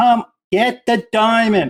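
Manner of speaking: high-pitched, drawn-out yell. Recalling rewatching a scene, the speaker reenacts yelling at the TV: reenacting screaming at the TV. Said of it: "I'm screaming at the T V".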